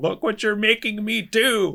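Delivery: whining, very high, whiny screeching scream. Complaining about a character screaming at Bucky over the shield, imitating a whiny scream. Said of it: "the fucking whiny scream".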